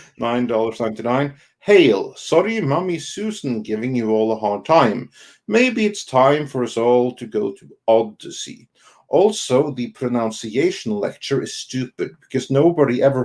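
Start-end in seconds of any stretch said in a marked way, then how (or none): none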